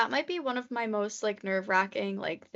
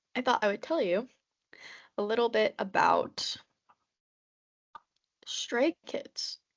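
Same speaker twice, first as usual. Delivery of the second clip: hiccuping, slower. Talking to a friend's viewers, hiccuping. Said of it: "I'm hiccuping".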